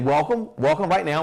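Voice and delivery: plain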